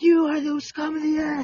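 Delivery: very high, aggressive, acted-out ranting scream. Retelling ranting at people in public, retelling own past scream. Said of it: "Just screaming at the guest room".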